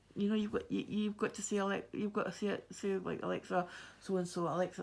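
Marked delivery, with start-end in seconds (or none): none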